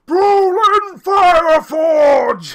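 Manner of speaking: very loud, very high, full yell. A game character spots Brolin and calls out over the tavern bar, yelling as loud as he can. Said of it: "he yells as loud as he can".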